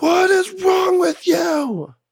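very high, slow screaming yell.

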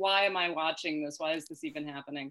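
ordinary talk

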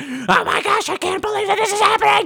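mock, sudden, very high, loud blast of outrage. Showing how he jumps up from talking softly, imitating someone going really loud. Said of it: "And then he goes up really loud".

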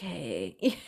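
soft male voice, suddenly gone quiet. Describing guys who turn quiet around friends: imitating a guy going quiet. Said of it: "they just get, like, quiet and they're like".

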